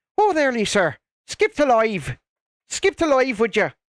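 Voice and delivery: put-on Irish accent. Voicing Shalini's typed message, Shalini impression, Irish accent. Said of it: "I don't think I did a terrible Irish accent there".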